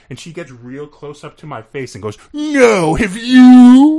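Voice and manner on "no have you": put-on very high, very loud, shrill, irritated, angry. Recalling meeting a famous star, the speaker imitates her reply: mock-pissed Channing impression. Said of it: "Like all pissed at you for asking".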